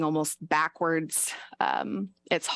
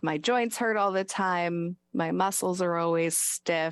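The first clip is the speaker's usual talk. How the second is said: ordinary talk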